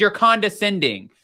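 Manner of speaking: plain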